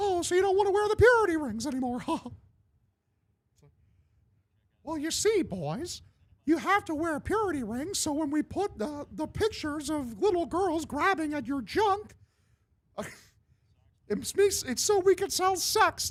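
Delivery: very high squeaky cartoon mouse. Doing the South Park scene in Mickey Mouse voice. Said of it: "the Mickey Mouse impression I based my Mickey Mouse impression on".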